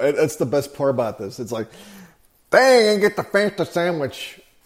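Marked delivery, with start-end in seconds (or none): 2.5-4.4 put-on Pittsburgh accent, pitched up. Speaker quoting Dan's analysis, imitating Dan's Pittsburghese accent. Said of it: "he's doing it in the Pittsburghese accent".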